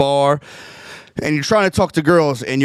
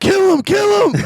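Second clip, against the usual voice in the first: very high-pitched voice; 4 dB louder than usual. Retelling a night on the bar, a friend shouting to kill him: Fiore impression. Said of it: "that's a good Fiore impression".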